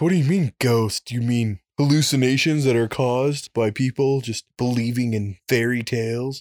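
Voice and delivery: scoffing, skeptical, dismissive scientist voice. Speaker explaining why ghost research is hard, doing a scientist impression. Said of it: "that's my scientist impression".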